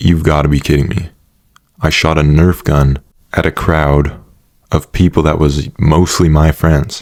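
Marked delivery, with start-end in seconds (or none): none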